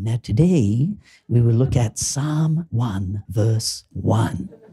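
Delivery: silky, really smooth narrator announcer voice. Retelling how a guy speaks over sleepy background music, really smooth voice. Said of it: "a guy with a really smooth voice says".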